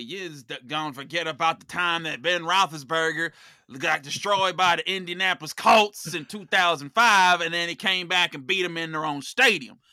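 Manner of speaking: loud, horrible Pittsburgh Yinzer accent. Answering a question about the Steelers' upcoming rematch the way a Yinzer would: bad Yinzer accent. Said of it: "That was a horrible Yinzer accent".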